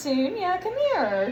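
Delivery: high, sing-song pet-calling voice.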